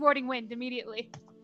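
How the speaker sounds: ordinary talk, nothing marked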